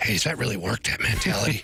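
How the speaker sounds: secretive, hushed stage whisper. Retelling a question from someone at the gym: imitating someone whispering. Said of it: "Why are we whispering?".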